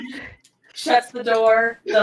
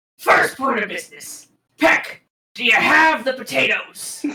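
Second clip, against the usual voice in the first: seasoned, stout dwarf barkeep voice. Narrator voices a dwarf bartender addressing peck, stout dwarf bartender voice. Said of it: "Um, and you can see now a dwarf, um, stout. Uh, he clearly looks as though he has been a bartender for quite some time. / Um, and you can see now a dwarf, um, stout. Uh, he clearly looks as though he".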